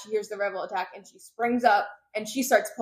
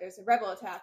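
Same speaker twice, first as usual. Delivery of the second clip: normal talking voice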